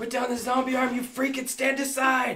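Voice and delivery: rushed, very high, fast yell. Acting a character's free action in the game, yelling in character. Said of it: "I yell out".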